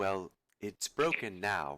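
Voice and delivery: small, tiny, almost whispered voice. Game master voicing a small dryad answering a player's apology, small near-whisper. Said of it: "a small voice from your right side, just almost a whisper".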